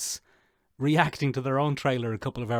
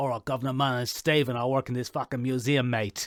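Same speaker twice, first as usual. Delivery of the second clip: fake, clumsy English accent. Imagining Oscar Isaac doing the voice for Disney, in a bad English accent. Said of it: "doing a poor version of that accent".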